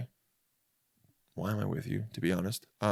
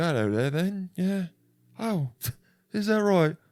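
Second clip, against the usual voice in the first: put-on high, suave, seductive voice with British accent. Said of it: "but he would be".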